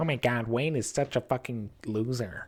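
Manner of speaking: put-on American internet troll voice. Acting out an imagined online commenter posting about the show: online troll voice. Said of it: "why is he American?".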